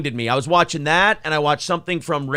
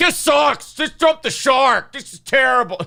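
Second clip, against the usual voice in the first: play-acted, higher, sulky, pouting, disgusted, angry voice; 9 semitones higher than usual. Recounting how a show host reacted to the potato, in mock-angry pouting. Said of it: "he was angry".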